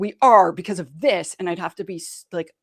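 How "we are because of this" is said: loud, firm, assertive, no-nonsense tone. Retelling giving orders to an aggressive team member: imitating own loud, firm voice. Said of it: "make my voice loud and firm".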